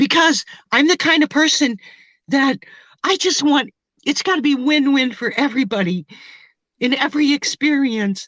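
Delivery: halting, choked-up voice breaking with emotion. A woman describes herself to Robert: getting emotional. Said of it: "I don't know why I'm getting emotional".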